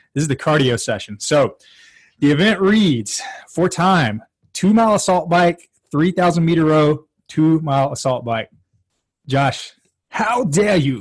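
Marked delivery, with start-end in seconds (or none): 9.2-11.0 slow, deliberate speech, every word drawn out. Reacting to the event list with a Greta Thunberg impression. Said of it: "that's my Greta impression".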